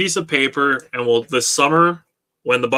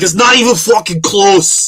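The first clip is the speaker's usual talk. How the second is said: loud put-on New York Italian accent; 5 semitones higher, 5 dB louder than usual. Speaker mimics Jake's passionate take in a New York Italian accent. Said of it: "he turned into a New York Italian accent".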